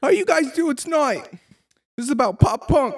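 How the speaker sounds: very high, put-on pop punk frontman voice. Joking about standing up: imitating a kid at crappy pop punk shows. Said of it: "one of those kids at, like, crappy pop punk shows".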